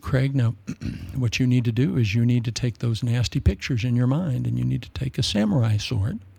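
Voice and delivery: soft-spoken, gentle, soothing and comforting voice. Quoting a counselor's advice to him, imitating a soft-spoken counselor. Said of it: "he was talking like this".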